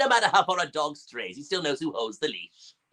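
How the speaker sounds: put-on villain voice. Showing the villain's familiar newer voice: Frieza voice. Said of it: "the one that we actually all know".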